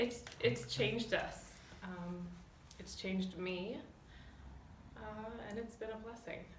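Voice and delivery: tearful, choking up, fighting back crying. Saying how friends who became family changed them: choking up, near tears. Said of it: "I'm gonna cry".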